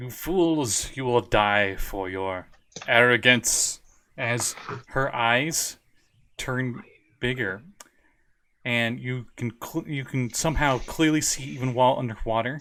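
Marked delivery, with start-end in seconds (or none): 0.0-3.8 loud, echoing sea witch voice. Narrating a scene, the speaker voices a villain addressing the listeners: loud, echoing Ursula-like voice. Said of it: "Like an Ursula-like voice. It's loud and echoes".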